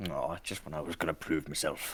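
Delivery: low, soft grumbling mumble under breath. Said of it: "he's kinda mumbling like".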